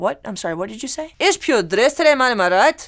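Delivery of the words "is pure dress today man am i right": put-on Scottish accent. Retelling what a Scottish boss said at work: imitating a Scottish boss. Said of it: "me tocó un jefe escocés".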